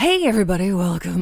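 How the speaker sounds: put-on radio announcer voice. Opening a podcast welcome while trying out a new radio voice. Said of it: "I'm trying a new radio voice out".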